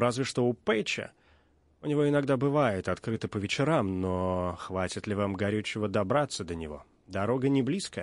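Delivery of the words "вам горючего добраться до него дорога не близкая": plain reading voice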